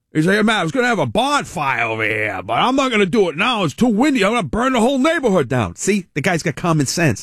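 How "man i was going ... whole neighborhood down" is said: put-on heavy, laid-on Boston accent. Retelling what a loud guy said about a bonfire, in a thick Boston accent. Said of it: "He's got the biggest Boston accent".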